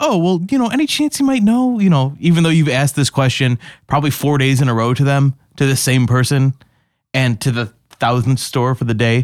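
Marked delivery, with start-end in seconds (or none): 0.0-1.8 very high, raised, put-on friendly voice. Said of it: "you're like".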